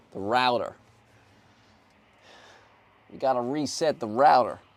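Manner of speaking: loud, put-on Texan American accent. Doing an American impression: put-on American accent. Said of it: "Is that what my American accent is, Texan?".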